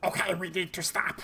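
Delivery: high-pitched female goblin voice, yelling. Narrating a game scene, a goblin calls to the others: yelling female goblin. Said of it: "a female goblin yelling to everybody else".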